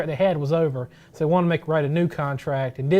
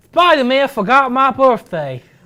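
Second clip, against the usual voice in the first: put-on lisping movie-style voice; 9 semitones higher, 10 dB louder than usual. Imitating a line from the movie as Electro: Jamie Foxx lisp. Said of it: "I'm trying try the, the Jamie Foxx list we had in the movie".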